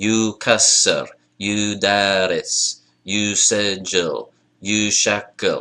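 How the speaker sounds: slow, even three-beat rhythm on each word.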